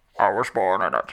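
put-on villain voice. Asked for a Batman voice, switches to a line in Bane voice. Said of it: "can I pivot and do a Bane voice instead?".

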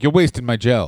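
put-on hazy, weird, unplaceable European accent. Retelling a barber who kept putting gel in: vague weird European accent. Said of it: "He had a very vague, weird European accent".

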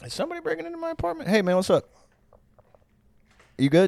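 very high-pitched voice. Retelling the other speaker checking for a break-in: imitating the other speaker. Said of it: "there was a moment there where you were like".

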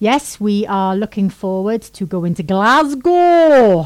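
loud, fake Scottish accent, way off the mark. Host announcing the trip to a friends' wedding in Glasgow, bad Scottish accent. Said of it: "That's a really good Icelandic accent".

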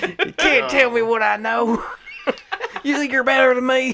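put-on angry, very high-pitched country-boy ranting voice. Voicing an angry character ranting: angry Kentucky Ducky voice. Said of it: "settle down, Kentucky Ducky".

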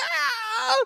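very high, shrieking scream. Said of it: "she screams like".

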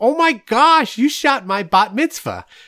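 put-on heavy New York accent, very high, very loud. Retelling what a woman said to him on the phone: thick New York accent. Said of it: "in a thick New York accent".

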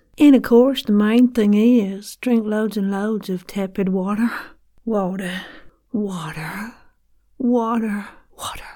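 put-on American Southern belle style accent. Redoing the last two lines in another accent, Southern belle accent. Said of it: "let's try that in a Southern Bale accent".

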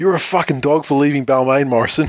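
put-on scornful, jeering screaming heckle. Retelling how a mate yelled from a car window: imitating someone screaming. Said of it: "screams at the top of his lungs".

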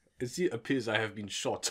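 put-on deep German-accented voice. Retelling Werner Herzog being shot during an interview: Werner Herzog impression. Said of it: "And he's just like".

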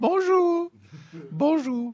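shrill, very high hollered "bonjour". Greeting listeners with a Julia Child impression, yelled bonjour. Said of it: "when I yelled bonjour".

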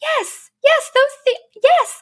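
very high, thrilled, excited squealed yes. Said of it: "in my out loud voice, was like".

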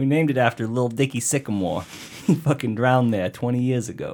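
played-up, put-on New York accent. Answering as the city of Flagstaff about renaming the lake, New York accent. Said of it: "This is New York again".

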